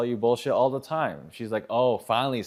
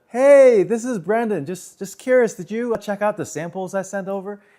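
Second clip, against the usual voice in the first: very high, loud, unnatural pitched-up calling voice; 9 semitones higher, 8 dB louder than usual. Retelling his own phone call to an agent, in a pitched-up voice. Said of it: "I was pitching up".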